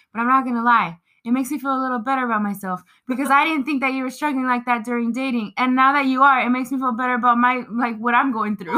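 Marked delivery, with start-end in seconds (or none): none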